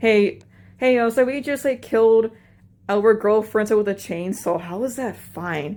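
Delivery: ordinary delivery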